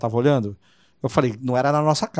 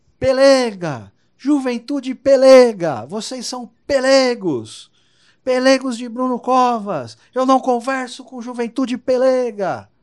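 put-on very high, very slow, loud, drawn-out shouting; 11 semitones higher, 5 dB louder than usual. Retelling how Serra started yelling at the youth group: imitating Serra shouting. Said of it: "O Serra já começou a gritar com a gente".

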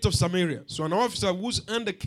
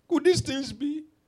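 acted scornful, sarcastic, pitched-up delivery; 7 semitones higher than usual. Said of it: "But this man was sarcastic".

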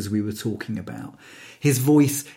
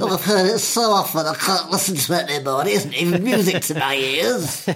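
teasing, pitched-up mocking voice; 5 semitones higher than usual. Talking to a partner, repeating what the partner once said, imitating the partner's voice. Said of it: "you said that in that exact voice".

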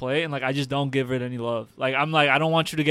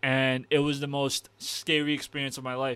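ordinary talk

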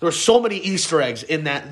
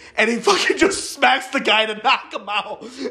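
ordinary talk, nothing marked

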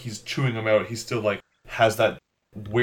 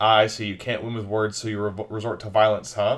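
ordinary talk, nothing marked

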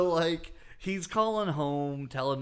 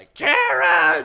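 put-on rough, shrill, creaky, very loud drunken bellow; 13 semitones higher, 10 dB louder than usual. Acting out a man calling after a woman leaving a bar: imitating a loud shout. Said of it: "Wow, that was loud".

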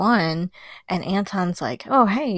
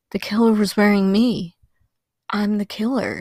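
put-on emotionless, dead-level, zombie-like monotone. Retelling what Anton said on seeing paint on his hand; flat, emotionless delivery. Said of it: "he just says it very like with no emotion, kind of like zombified".

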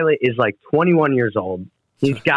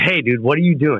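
put-on troubled-sounding voice. Retelling a phone call from the drummer: imitating someone sounding in trouble. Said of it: "And he sounded, like, in trouble".

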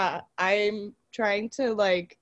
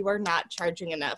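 ordinary delivery

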